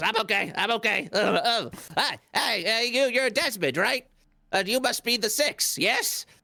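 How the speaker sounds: eager, stammering, high, excited little rat voice. Voicing a ratty familiar who stumbles up to greet the party: excited rat familiar voice. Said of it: "gets himself back up and goes".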